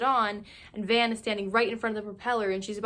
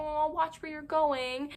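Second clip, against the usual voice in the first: high, slow, patronizing coo. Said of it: "patronizing him and being like".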